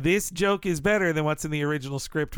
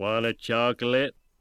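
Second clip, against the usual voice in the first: put-on Southern drawl, lower; 5 semitones lower than usual. Playing a scene offering a chocolate: Forrest Gump voice. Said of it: "like how Gump says it".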